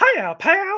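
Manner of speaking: squeaky cartoon mouse impression. Recalling impressions that someone hated, doing the Mickey Mouse voice. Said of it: "he hated the Mickey Mouse too".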